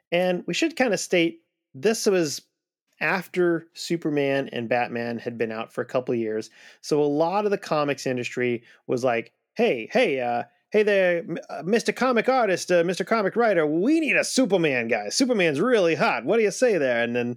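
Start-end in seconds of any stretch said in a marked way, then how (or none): 9.5-17.0 put-on old-timey 1940s voice, higher. Acting out comics publishers asking for a Superman-type hero: put-on 1940s voice. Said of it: "This is my nineteen forties voice".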